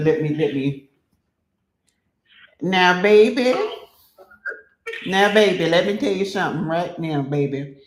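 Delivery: put-on elderly grandmother voice. Speaker gets into an acting role for someone; old grandmother voice. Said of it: "I had to get in my old grandmama's voice".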